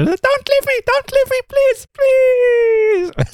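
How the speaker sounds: very high, funny, pleading begging voice. Recounting a favorite episode scene where a being begs not to be left: imitating a pleading creature. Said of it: "הישות הזאת התחננה שלא ישאירו אותה לבד".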